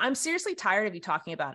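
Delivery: put-on snarky tone. Retelling what Eric said when told about it again: imitating Eric being snarky. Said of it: "he was kinda snarky about it".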